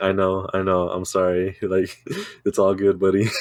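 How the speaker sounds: put-on laughter while talking. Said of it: "he was laughing too".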